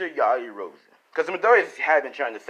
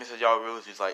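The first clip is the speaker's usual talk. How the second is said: usual speaking voice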